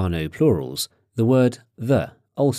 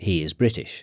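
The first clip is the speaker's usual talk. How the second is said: ordinary talk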